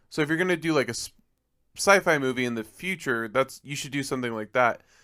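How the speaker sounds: usual speaking voice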